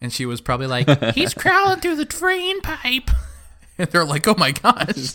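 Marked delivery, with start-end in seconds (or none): 1.1-3.1 put-on child's voice, pitched very high. Retelling a childhood friend telling parents where Charlie is, imitating a child's voice. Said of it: "I hate that voice".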